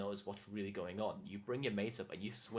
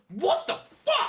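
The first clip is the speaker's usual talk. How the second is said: very high-pitched, very loud, shrill yell; 15 dB louder than usual. Voicing the Spire Tech as he grabs for his pistol: shouting. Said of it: "and just shouts".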